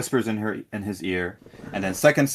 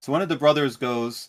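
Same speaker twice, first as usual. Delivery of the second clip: ordinary talk, nothing marked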